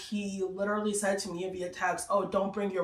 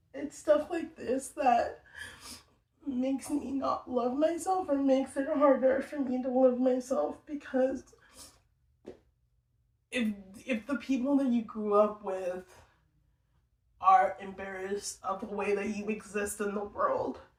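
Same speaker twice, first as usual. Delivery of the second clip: tearful speech, higher; 4 semitones higher than usual. Explaining how being seen as embarrassing makes self-love hard, crying while talking. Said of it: "I'm crying now".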